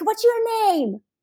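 very high-pitched, loud yelling. Speaker retells an ER front-desk worker questioning her, imitating someone yelling. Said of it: "she's yelling at me".

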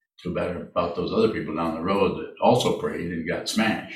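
usual speaking voice

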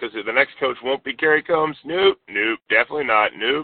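usual speaking voice

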